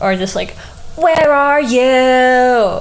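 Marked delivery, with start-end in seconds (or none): 1.0-2.8 very loud, high call with drawn-out "you". Sharing a headcanon, quoting an emo line as Wilbur: Wilbur's "Hi there, my name's Wilbur" voice. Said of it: "he definitely says it in the, in the, "Hi there, my name's Wilbur" voice".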